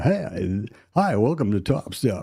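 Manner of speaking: slow, radio-style announcer voiceover delivery. Imitating the support line greeting recorded by Hogue: imitating Hogue's radio voice. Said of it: "he does his radio voice".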